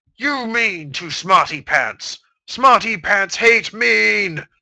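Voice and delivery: loud, slow, deliberate, bellowing monster roar. Reading a fan story aloud, a grown monster doll roars: roaring monster voice.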